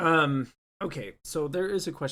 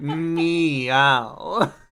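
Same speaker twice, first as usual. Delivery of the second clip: put-on devilish cat voice; 4 semitones higher, 10 dB louder than usual. Acting out the Cheshire Cat as the devil, talking to Alice: Cheshire Cat as the devil. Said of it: "Cheshire Cat being like the devil and being like".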